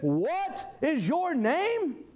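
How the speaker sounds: put-on loud, severe, stern, commanding, very slow and drawn-out. Retelling a man asking another his name a third time, mock-stern louder voice. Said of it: "even in a louder and more stern voice".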